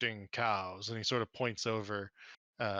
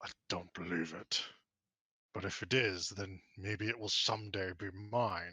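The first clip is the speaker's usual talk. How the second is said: dragon voice speaking right after a snort; 2 semitones lower than usual. Game master voicing a dragon answering an adventurer, snorting dragon reply. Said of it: "he sort of snorts and he says".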